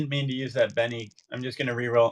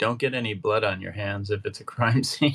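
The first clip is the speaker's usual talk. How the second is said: lower whispering voice; 3 semitones lower than usual. Speaking in character to Bartholomew about a possible crime scene: whispering in character. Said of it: "And then I whisper to Bartholomew".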